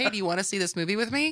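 ordinary talk, nothing marked

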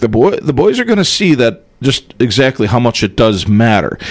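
ordinary talk

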